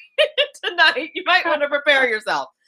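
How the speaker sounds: high voice, laughing through words. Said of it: "She's like".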